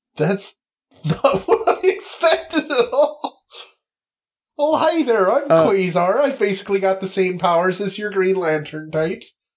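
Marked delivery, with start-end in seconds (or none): 4.6-9.4 attempted Wisconsin accent, sliding partly into pirate voice. Voicing Quasar after saying he has a Wisconsin accent, attempting that accent. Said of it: "No, that was almost pirate accent".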